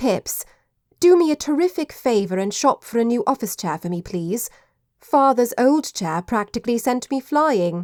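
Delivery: plain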